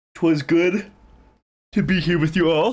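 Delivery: yawning while speaking. Saying goodbye to the chat, talking through a yawn. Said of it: "I was in the middle of a yawn".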